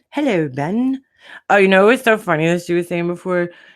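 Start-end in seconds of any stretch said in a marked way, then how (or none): 0.1-1.0 put-on, pitched-up English accent. Greeting someone who just came in, in an English accent. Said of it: "anybody named Ben should have an English accent".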